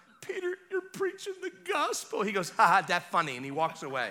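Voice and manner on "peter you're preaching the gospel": put-on choked-up crying, very high and tearful. Retelling your words to Peter, an atheist, in the garden, acting out crying. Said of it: "I'm like crying".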